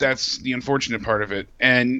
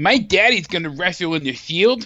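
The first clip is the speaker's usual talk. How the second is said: mock bratty pretentious child voice, higher; 5 semitones higher than usual. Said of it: "He sounded like a pretentious five-year-old".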